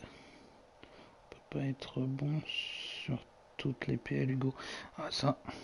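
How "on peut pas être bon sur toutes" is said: very slow, drawn-out, solemn whisper. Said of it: "Je vais graver cette phrase".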